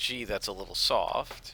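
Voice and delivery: ordinary talk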